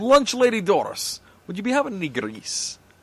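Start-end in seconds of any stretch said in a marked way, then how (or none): 1.5-2.7 cartoonish, put-on Scottish brogue. In a chat about Simpsons characters, doing a line as a Scottish accent impersonation. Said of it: "You'd do an incredible impersonation".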